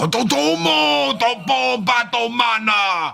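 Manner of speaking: belted out, high-pitched and loud. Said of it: "the Japanese character, he's like".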